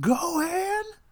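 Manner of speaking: very high, acted-out shrieking scream. Podcast host retells losing it while watching a movie scene: retelling a scream. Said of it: "I screamed into the mic".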